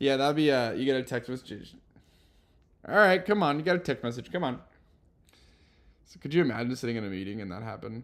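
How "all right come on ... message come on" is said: put-on Midwestern dad voice, pitched up. Urging someone to check a text message alert, in a Midwestern dad voice. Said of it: "you have me in my like Midwestern dad voice".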